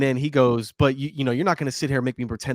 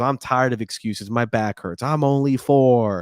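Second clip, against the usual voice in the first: put-on mean ridiculing tone, slow, cold and mocking. Retelling the dad ridiculing his four-year-old son: imitating a dad ridiculing a boy. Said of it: "starts ridiculing the boy even more".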